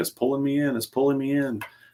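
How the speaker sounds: put-on high-pitched screaming, repeated over and over. Retelling a fishing trip when he hooked a big fish: imitating someone screaming. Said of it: "He kept screaming".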